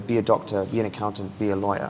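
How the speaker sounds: ordinary delivery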